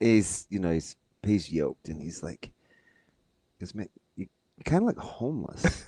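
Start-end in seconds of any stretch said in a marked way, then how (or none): 3.6-5.8 really soft-spoken, slightly high-pitched delivery. Retelling what a new coach said about clothes: imitating a soft-spoken coach. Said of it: "he has this really soft-spoken delivery".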